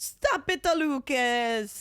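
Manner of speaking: put-on Italian American accent. Answering the other speaker's teasing about being loud: put-on Italian American accent. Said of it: "Does it feel right doing that accent?".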